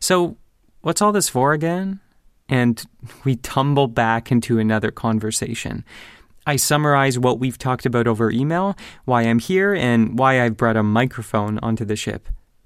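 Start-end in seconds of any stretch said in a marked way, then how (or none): 0.0-2.0 play-acted teasing, high, playfully suspicious. Retelling a conversation partner's reply to a request to record, mock playfully suspicious. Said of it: "in a playfully suspicious tone".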